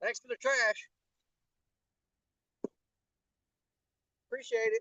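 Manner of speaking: very quiet, soft, high-pitched sarcastic tone. Complaining about trash left at a fishing spot: sarcastic. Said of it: "I'm being sarcastic".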